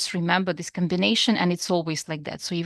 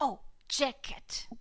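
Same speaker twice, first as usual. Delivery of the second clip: put-on very quiet, breathy young child voice; 6 semitones higher, 12 dB quieter than usual. Repeating a word back the way a five-year-old would, five-year-old child voice. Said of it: "that was my impersonation of a five-year-old".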